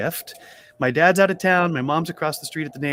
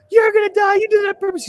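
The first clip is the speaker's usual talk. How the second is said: put-on very high, screeching little-kid shriek; 4 dB louder than usual. Retelling how a crying, screaming friend yelled at him: imitating a screaming child. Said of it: "He's screaming".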